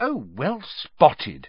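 cutting, acidic tone with swooping pitch. A girl answers a boy's remark, acidly. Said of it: "she said acidly".

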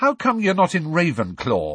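insistent, demanding, high-pitched voice full of wonder. Narrator reads a boy's question to a girl, demanding. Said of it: "he demanded".

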